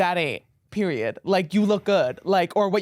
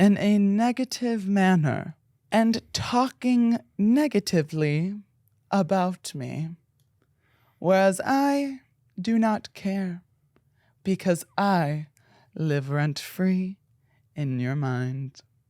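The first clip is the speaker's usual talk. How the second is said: mock-poetic delivery. Explaining a phrase to aliens after being asked for poetry: mock-poetic delivery. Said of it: "in a more poetic way".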